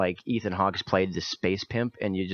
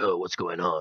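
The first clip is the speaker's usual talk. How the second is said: mock affected macho voice. Talking about a film, speaker imitates its lead actor, imitating a put-on macho voice. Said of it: "he affects this kind of like macho voice".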